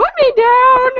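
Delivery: very high, shrill, loud dog voice. Describing a dog that hates being picked up: voicing a squirming dog. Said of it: "squirm and he'll, mm, be like".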